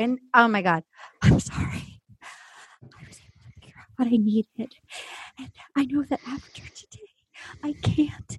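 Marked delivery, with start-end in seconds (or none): 1.2-8.4 soft, unvoiced whisper. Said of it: "starts whispering".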